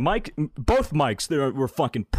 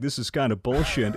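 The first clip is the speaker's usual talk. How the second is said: usual speaking voice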